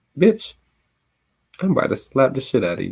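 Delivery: gentle, sugary, soft, swooping pimp-like voice. Reading a comedian's routine aloud, where he retells speaking to a woman: imitating a soft, sweet pimp voice. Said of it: "I said softly, sweetly, like a pimp might say".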